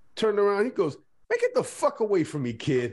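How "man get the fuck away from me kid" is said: put-on curt, can't-be-bothered dismissive tone, swooping pitch. Retelling how a ballplayer turned away an autograph seeker: dismissive brush-off. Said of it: "He was so dismissive".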